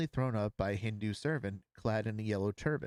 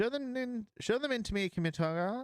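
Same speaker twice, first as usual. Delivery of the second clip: very high, piping, calling voice; 13 semitones higher than usual. Narrator reading a story, a voice calling from an inner room, high piping voice. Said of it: "there came a high piping voice".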